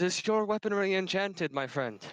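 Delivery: high, called-out shout. On his turn in a fight, a character shouts a question to an ally; shouting to an ally. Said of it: "he shouts".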